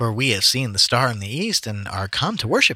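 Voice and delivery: normal talking voice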